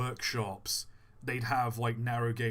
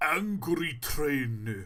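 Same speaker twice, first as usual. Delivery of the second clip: put-on, fake Japanese accent; 4 semitones higher, 3 dB louder than usual. Describing a train that looks angry: fake japanese accent. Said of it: "don't do the fake Japanese accent".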